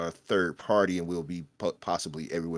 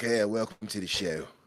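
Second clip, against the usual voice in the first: fake, put-on English accent; 2 semitones higher, 3 dB quieter than usual. Welcoming someone to the show: put-on English accent. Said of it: "I'm putting on my English accent now".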